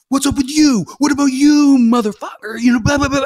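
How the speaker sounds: man yelling, raw screaming rant. Retelling how a man in a wheelchair screamed at them: imitating a man screaming. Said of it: "he's screaming at me".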